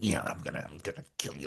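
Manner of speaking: creepy, up-close, gross, menacing whisper. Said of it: "Like that gross killer voice".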